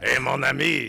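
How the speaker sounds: very loud, high-pitched, belted cartoon voice. Suggesting how a reporter should talk about skunks: Pepe Le Pew voice. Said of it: "she should totally do this in the Pepe Le Pew voice".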